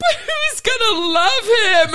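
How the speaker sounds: put-on very high, slow, teary sobbing. Retelling a movie scene where she asks a question: imitating someone crying. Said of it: "she's crying".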